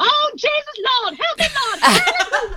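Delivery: very high, fake, put-on prayerful tone. Retelling how she got away in the dressing room: imitating a put-on Jesus act. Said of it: "whole Jesus act".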